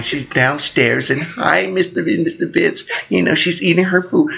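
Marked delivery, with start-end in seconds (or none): 0.0-2.9 put-on sweet nice-girl voice, creaky. Retelling a girl greeting them from downstairs: imitating how she talks. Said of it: "This how she talk".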